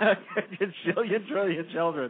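laughing while speaking.

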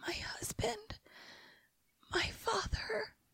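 put-on whisper between breathless gasps. Telling a story, the speaker acts out a woman in a circle, retelling a gasping voice. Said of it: "in a gasping voice".

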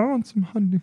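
very high-pitched cartoon bear voice. Joking about the Hundred Acre Woods, doing a Winnie the Pooh voice. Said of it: "you're doing Pooh".

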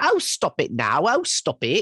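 put-on very slow, high, swooping, lilting English accent. Imitating a grandmother who always had an english accent: put-on english accent. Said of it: "her entire life she had an English accent".

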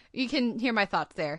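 ordinary delivery

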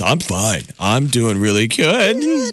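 slow, drawn-out voice, cracking and breaking. Showing how a friend's voice betrays real feelings, voice cracking. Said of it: "The voice cracks and betrays your real feelings".

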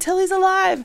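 put-on yelling. Retelling how sorority sisters reacted when she woke up: imitating friends yelling. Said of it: "They start yelling".

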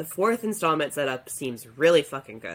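ordinary talk

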